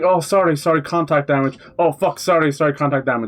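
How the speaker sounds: put-on apologetic tone. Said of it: "I'm like".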